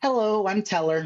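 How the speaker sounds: very sincere and earnest tone. Retelling how Teller greeted the speaker: imitating Teller, very sincere. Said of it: "very sincerely, looks right at me and just goes".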